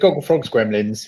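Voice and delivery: ordinary talk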